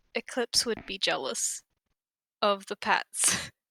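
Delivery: very soft, quick, almost whispered murmur. A role-player voicing her character's aside to the group, very quiet. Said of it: "very quietly says".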